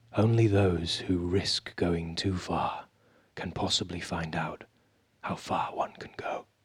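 low, close-mic whisper. Asked to say it once more, a speaker gets close to the mic; whispering. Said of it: "I'm going to whisper it".

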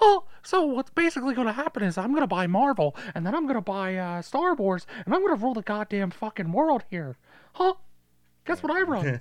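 voice going way up high and bouncy. After a co-host says it's fun to do, speaker does Mickey Mouse voice. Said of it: "The Mickey Mouse voice is fun to do".

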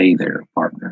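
put-on whispered, breathy, perfect American accent. Voicing a figure in the game who greets the player: perfect American accent. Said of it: "a perfect American accent".

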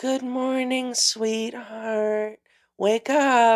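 put-on gentle voice. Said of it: "don't use the soft voice".

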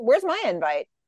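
ordinary talk, nothing marked

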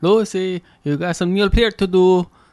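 put-on Cuban accent. Co-host jumps in on an accent bit, doing a Ricky Ricardo impression. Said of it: "Just pretend you're Ricky Ricardo".

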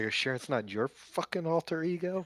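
soft mutter under the breath. A player voices what their character would say, muttered under the breath. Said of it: "under my breath".

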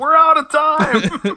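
very high, loud, slow, stretched-out delivery. Imitating a wrestling announcer ending a show: Tony Schiavone impression. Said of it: "You can almost hear Tony Schiavone going".

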